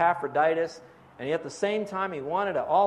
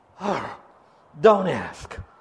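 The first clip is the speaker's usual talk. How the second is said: big, dramatic, very expressive, loud and swooping; 5 dB louder than usual. Retelling how a colleague answered every Sunday greeting: imitating a very expressive colleague. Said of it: "he'd go like this".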